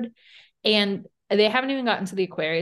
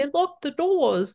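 clumsy, bad, high-pitched British accent; 7 semitones higher than usual. Retelling what a woman kept yelling at the doors, in a bad British accent. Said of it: "I can't do that accent".

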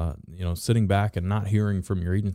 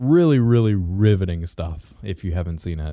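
loud, heavy, dripping, extreme sarcasm; 6 dB louder than usual. Describing the first ever uploaded video to a co-host: extreme sarcasm. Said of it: "I say that with extreme sarcasm".

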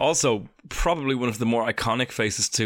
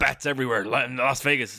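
put-on drawling writer voice; 2 semitones higher than usual. Introduced as an impressionist, doing a quick Hunter S. Thompson impression. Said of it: "That was Rick from Rick and Morty".

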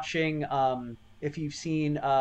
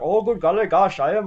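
loud, raised, caricatured put-on Indian accent; 2 semitones higher, 5 dB louder than usual. Retelling a comedy bit in a movie: imitating Ernest's Indian-person bit. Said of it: "he's like".

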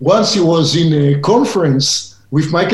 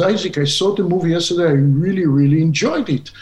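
ordinary delivery

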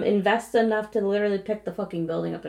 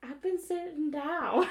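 put-on pitched-up elderly cartoon old-man voice; 7 semitones higher, 10 dB quieter than usual. Voicing a ghost while joking with another speaker, in a Family Guy old guy voice. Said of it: "you heard it in my voice too".

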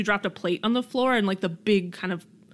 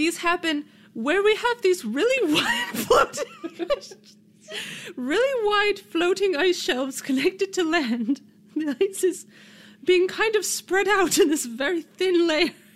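put-on British woman accent, higher; 9 semitones higher than usual. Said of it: "I don't know why I sound like a British woman".

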